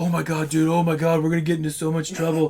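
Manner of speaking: acted, fake panic. Retelling a prank, imitating the group's fake panic mode. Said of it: "we start going into fake panic mode".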